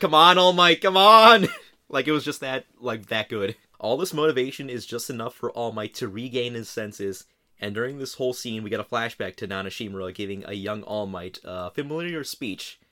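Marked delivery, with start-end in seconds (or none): 0.0-1.5 very loud, high shouting yell. Recalling first watching this scene, the speaker re-enacts shouting at the TV. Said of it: "I was like kinda of shouting at my TV".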